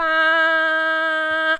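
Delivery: flat, high, level first tone on ba. Teaching the Chinese first tone on the sound ba: ba high and level. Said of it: "use the first tone".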